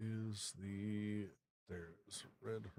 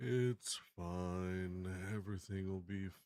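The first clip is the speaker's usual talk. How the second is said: gloomy donkey character voice; 2 semitones lower, 4 dB louder than usual. Greeting the others at the start: Eeyore voice. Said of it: "Sounds like Eeyore from Winnie the Pooh".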